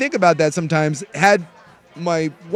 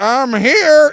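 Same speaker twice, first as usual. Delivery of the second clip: mock, raised, high drunken slurring; 8 semitones higher, 6 dB louder than usual. Retelling what a man at the door said: imitating drunk slurring. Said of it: "he's clearly slurring".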